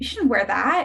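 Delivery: put-on mean, taunting mean-girl voice. Describing the inner mean girl voice to a listener, imitating a mean girl voice. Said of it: "that that mean voice".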